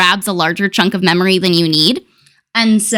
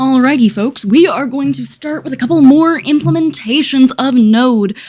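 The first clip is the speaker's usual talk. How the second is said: put-on radio announcer voice, higher pitched; 5 semitones higher than usual. Greeting the folks, in a put-on radio announcer voice. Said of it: "radio voice".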